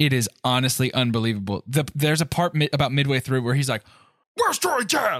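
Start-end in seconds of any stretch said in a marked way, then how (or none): 4.4-5.2 imitated aggressive yell, much higher and slower. Mocking an actor's delivery in a kids' movie, mimicking an aggressive yell. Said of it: "the aggression with which he yells that".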